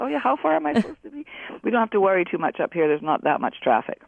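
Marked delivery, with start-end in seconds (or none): 0.0-1.2 high-pitched, mock puzzled tone. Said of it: "and then you review".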